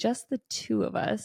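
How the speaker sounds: mock very seductive, slow, breathy, half-whispered. Retelling a scene, Buffy inviting Xander: imitating Buffy saying it seductively. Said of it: "she's kinda saying very seductively".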